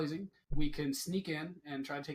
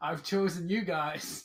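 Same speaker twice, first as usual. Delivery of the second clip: very loud shouting. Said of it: "We will just yell out real loud".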